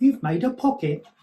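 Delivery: put-on British accent. Walking listeners through the steps, British accent. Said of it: "My British accent".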